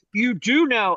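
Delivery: put-on condescending voice. Quoting a post someone left on their wall: imitating a condescending commenter. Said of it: "that's what every poster sounds like when they're being condescending jerks".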